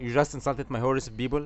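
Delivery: ordinary delivery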